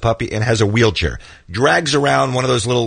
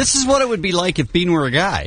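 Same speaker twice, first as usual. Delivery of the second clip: high, mocking impression. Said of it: "is this you making fun of how my voice normally sounds".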